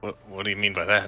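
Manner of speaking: confused, puzzled tone. Voicing a caravan captain who doesn't understand the remark: confused. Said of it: "looks at you very confusedly".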